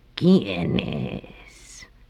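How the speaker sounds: low, quavering, wavering, trembling voice. Narrator reads the wolf, hiding in the grandmother's bed, answering the knock: trembling voice. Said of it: "preguntó el lobo con voz temblorosa".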